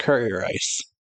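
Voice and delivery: ordinary talk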